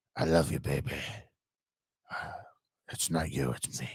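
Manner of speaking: whispered, low, soft, breathy murmur. Discussing a show's characters, a viewer imitates one in a low, soft voice. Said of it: "is he trying to be like [name]?".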